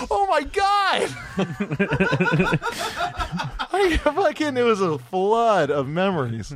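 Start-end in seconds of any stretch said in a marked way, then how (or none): 0.1-1.1 shocked cry, high and slow. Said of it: "And I was like".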